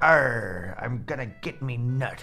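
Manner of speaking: stock put-on sea-dog pirate accent, arr and all. Imagining what the pirates in a show say: put-on pirate voice. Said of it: "I'm assuming they're just like".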